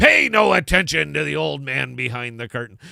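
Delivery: loud, booming, rough and creaky voice. On a call, quoting a big green face in a Commander Crunch voice. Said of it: "That was my Commander Crunch voice".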